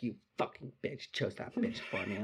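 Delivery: mock angry mumbling under the breath. Retelling what she muttered while being helped up, mock-angry mumbling. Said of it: "mumbling, like, pissed off shit to herself".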